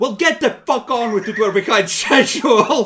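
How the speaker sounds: very loud, high, shrill, barking bossy yell. Voicing an overseer who spots a worker: overseer yelling. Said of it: "yells you".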